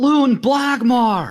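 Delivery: loud, slow, very high yelling.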